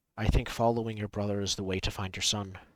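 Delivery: soft, hushed, secretive half-whisper. Walking beside a companion, a character leans close and says: in a half-whisper. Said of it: "just like in a whisper says".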